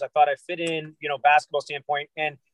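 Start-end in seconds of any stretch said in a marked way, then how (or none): none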